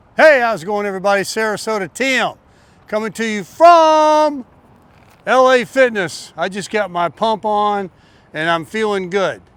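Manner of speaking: slightly upbeat, enthusiastic, stretched from. Opening a video after a workout, a little enthusiastic. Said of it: "start out the video a little enthusiastic".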